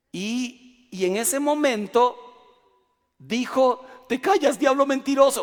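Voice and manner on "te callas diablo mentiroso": loud, stern voice that cracks and breaks apart. Retelling what the pastor said when he was found out, imitating a cracking voice. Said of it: "Pero se le quebró la voz".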